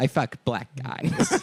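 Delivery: put-on Valley girl voice.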